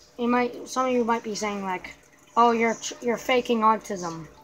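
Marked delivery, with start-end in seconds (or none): none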